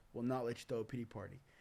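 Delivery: ordinary delivery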